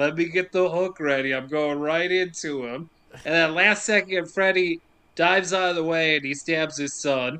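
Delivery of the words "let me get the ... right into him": ordinary delivery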